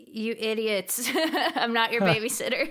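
very slow, drawn-out, exasperated tone. Imagining how Seth would answer the group: imitating an exasperated Seth. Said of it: "He's probably gonna be like".

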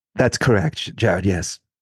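fake posh British accent. Asked by the host about his accent, the guest answers: faux posh British accent. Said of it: "what accent are you doing now?".

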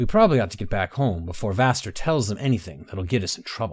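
plain reading voice

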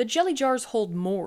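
ordinary delivery, nothing marked

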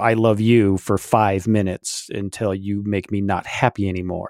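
ordinary delivery

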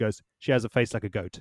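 ordinary delivery

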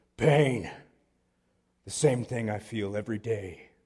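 dead-serious, intense gym-guy voice. Retelling what an intense, ripped guy at the gym answered: imitating an intense gym guy. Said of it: "he looks at me like he was the Hulk".

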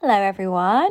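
croaky, hoarse, just-woken-up voice. Greeting everyone in the morning: croaky morning voice. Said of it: "croaky voice".

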